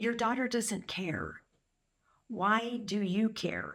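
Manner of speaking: put-on calm, even delivery. Retelling a man's reply to a woman screaming at him, imitating calm speech. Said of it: "And he was so calm".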